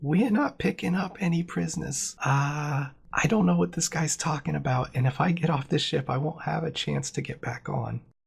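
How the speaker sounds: hushed private-sounding tone. The game master voices Harriet half-whispering to Larry: Harriet half-whispering. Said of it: "She whispers to Larry and she says".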